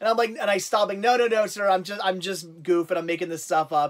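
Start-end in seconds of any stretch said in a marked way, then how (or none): none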